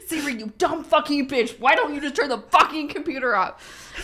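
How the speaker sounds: mock savage, high, vicious, all-out fury. Imitating a partner insulting the voice assistant: imitating someone berating Siri. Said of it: "McKay absolutely eviscerating Siri".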